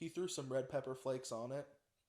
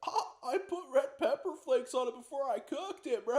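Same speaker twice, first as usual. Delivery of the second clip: very high, very loud cartoon fish voice; 10 semitones higher, 8 dB louder than usual. Retelling what the guy who made the pizza told him, in a SpongeBob fish voice. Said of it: "he sounds like the fish from SpongeBob".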